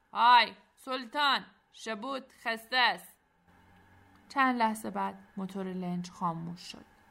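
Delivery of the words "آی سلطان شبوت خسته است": loud hollered shout across distance. As a patrol boat approaches, the captain lets go and calls out, shouting. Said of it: "ناخدا دستش را ول کرد و داد زد".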